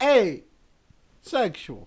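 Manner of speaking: loud, high, put-on Italian guy accent. Doing a joke bit as an italian guy, in an italian guy accent. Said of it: "an Italian guy trying to express his sexuality".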